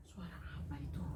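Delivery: hushed, breathy, surprised and wondering whisper.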